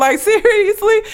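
high, indignant call-out. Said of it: "I would've been like".

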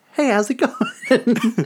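very high-pitched, put-on Boston accent. Joking about wanting a host with a Boston accent: Mark Wahlberg impression. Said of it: "Mark Wahlberg".

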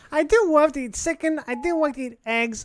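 high-pitched put-on dog voice. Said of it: "It's my dog's voice".

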